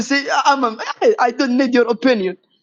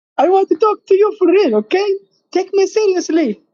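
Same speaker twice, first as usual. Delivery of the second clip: very high, weird, squeaky voice; 8 semitones higher than usual. Asking the others for a real talk and to be taken seriously, in a weird squeaky Mickey Mouse voice. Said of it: "that weird squeaky Mickey Mouse voice".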